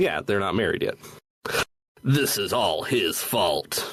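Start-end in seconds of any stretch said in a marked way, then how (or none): 2.0-3.9 strained, throat-straining put-on character voice. Acting out a character's line while recapping a game's story: strained put-on voice. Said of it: "I should stop doing that voice".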